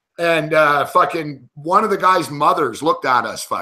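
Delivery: ordinary delivery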